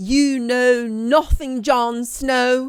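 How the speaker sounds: very loud, high, booming, awful delivery. Speaker tries again to quote a line from the show; bad Game of Thrones impression. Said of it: "that was a terrible impression".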